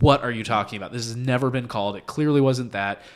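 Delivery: ordinary delivery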